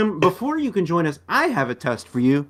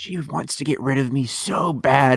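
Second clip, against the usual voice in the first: whispered aside. Speaking in character, an aside the guide should not hear: whispering. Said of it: "he whispers".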